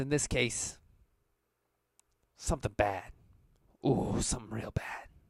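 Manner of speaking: menacing chuckle in character voice. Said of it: "He kinda chuckles".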